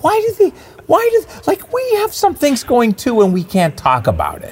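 very high, squeaky, swooping comic voice. Complaining that they cannot talk about their projects: Jiminy Glick voice. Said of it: "I'm doing Martin Short, doing Jiminy Glick".

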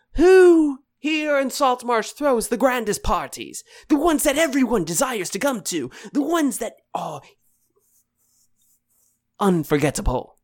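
showy, loud, high yell. Voicing a host who stands before crowds: yelling to the crowd. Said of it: "And he just yells".

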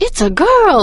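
put-on surprised excitement. Speaker recounting a favourite movie moment: mimicking Lumiere's surprised excitement. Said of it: "he's like surprised and excited".

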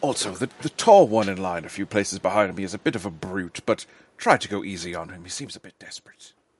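confiding, secretive, conspiratorial aside tone. A player's character leans in to confide in another character, conspiratorial. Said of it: "I'd lean in like a little conspiratorially and say".

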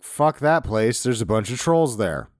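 ordinary talk, nothing marked

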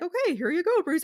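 kind, slightly patronizing tone. Retelling a cartoon scene where Simon Trent signs for Bruce: imitating Simon Trent, slightly patronizing. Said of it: "it's not quite patronizing".

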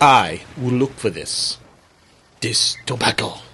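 put-on Spanish accent, read-aloud delivery. Reading a story aloud, voicing Columbus: Columbus with a Spanish accent. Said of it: "he said with a Spanish accent".

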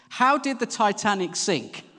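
loud, high, drawn-out, carrying delivery. Parent on a ferry deck retells their son's question, in a really loud voice. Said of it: "in a really loud voice".

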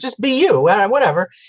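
high, airy brush-off.

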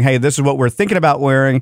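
ordinary talk

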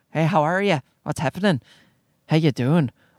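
admiring put-on Irish accent. Showing the irish accent the speaker loves: put-on irish accent. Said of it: "I'm a sucker also for the Irish accent".

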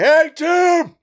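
loud barbarian-style call. Voicing a large barbarian who stands up from bushes: barbarian calling out. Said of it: "and calling out, like".

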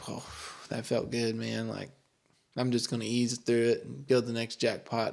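ordinary talk

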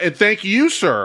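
very loud speech. Retelling tipping a man for a beer, the speaker quotes his reply really loudly. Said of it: "he was really loudly saying like".

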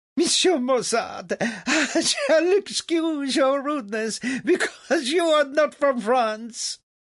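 very high, stuttering, broken by laughter. The narrator reads the king's reply; stuttering over his laughter.

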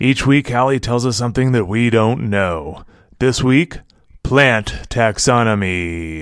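dramatic, slow movie-trailer announcer narrator voice. Co-host introducing this week's episode topic, in a movie guy voice. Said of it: "that was my movie guy voice".

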